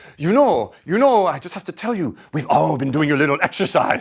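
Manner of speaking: put-on gentlemanly French accent in English. Speaker retelling what a gentleman at a reception told them: French accent. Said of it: "a French accent".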